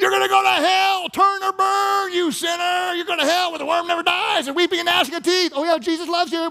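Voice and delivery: very high, shrill, loud rude preacher rant. Imitating drive-by witnessing from a car window: imitating a rude drive-by witnesser. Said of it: "rude ones".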